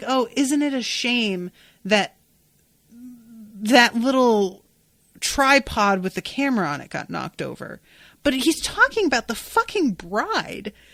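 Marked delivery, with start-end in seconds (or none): none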